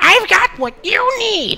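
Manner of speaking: shrill, very high, loud charging goblin war cry. Picturing yourself as a goblin charging the player, yelling as a goblin. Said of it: "and just yelling".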